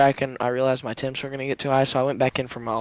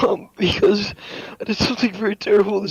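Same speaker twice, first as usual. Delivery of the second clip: tearful, crying while talking, much higher; 7 semitones higher than usual. A driver, asked what happened in the race, answers crying while talking. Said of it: "He's crying".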